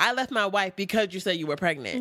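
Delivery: ordinary talk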